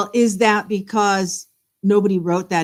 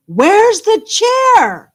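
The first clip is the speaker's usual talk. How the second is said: frantic, swooping, shrill scream, very high; 13 semitones higher, 7 dB louder than usual. Retelling standing up and screaming a question: retelling a scream. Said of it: "I screamed".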